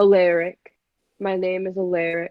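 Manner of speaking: sighing heavily. A frightened character introduces himself by name, with a heavy sigh. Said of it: "sighs heavily and kind of goes".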